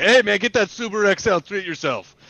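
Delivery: high, loud yelling. Imagining phoning the listener about a car, acting out yelling into the phone. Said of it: "and I'm in yelling through the phone to you".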